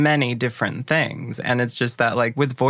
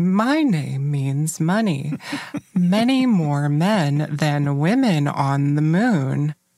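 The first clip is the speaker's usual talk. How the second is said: slow, over-the-top, exaggerated feminine voice; 3 semitones higher than usual. Speaker demonstrates a voice she used to put on, stereotypical woman voice. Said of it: "the like stereotype woman voice".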